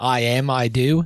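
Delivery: slow, drawn-out put-on British accent. Mocking another speaker's line: imitating a British accent. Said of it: "what British people say".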